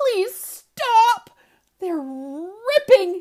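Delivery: pleading. Tess, as he pulls books off the shelves, begging. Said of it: "she begs".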